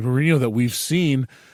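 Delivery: ordinary delivery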